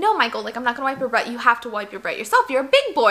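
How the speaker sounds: plain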